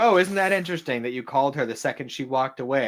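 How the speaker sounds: ordinary delivery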